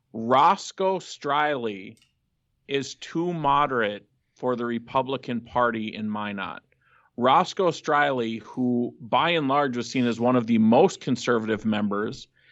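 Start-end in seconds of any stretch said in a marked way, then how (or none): 0.2-6.6 very slow, deliberate, spelled-out delivery. Speaker making a point for the people of North Dakota: saying it really slowly. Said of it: "I'm gonna say this really slowly".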